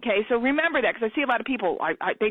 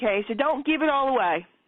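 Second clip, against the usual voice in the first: ordinary talk, nothing marked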